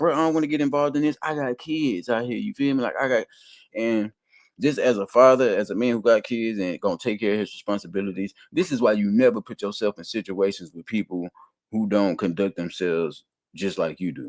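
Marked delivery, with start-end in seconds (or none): 0.0-3.3 play-acted, urgent, pleading screaming outcry. Retelling how a man's friend reacted on a livestream, imitating someone screaming. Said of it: "screaming at the top of his lungs".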